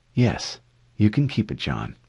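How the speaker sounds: plain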